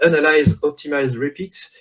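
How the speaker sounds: heavy French accent in English. A speaker giving a French conference talk reads its English title: French-accented English. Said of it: "avec un magnifique accent anglais ... c'est ironique".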